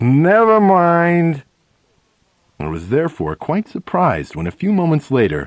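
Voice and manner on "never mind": even louder high call, with "mind" drawn out. At a table, the speaker drops the champagne idea after hearing the price: even louder voice. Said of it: "in an even louder voice than before".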